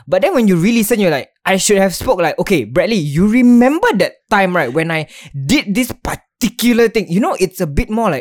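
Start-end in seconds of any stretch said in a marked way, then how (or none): none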